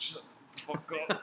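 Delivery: mock muttering under breath. Retelling a man's reply after being asked if he was okay, imitating a mutter under breath. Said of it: "under his breath".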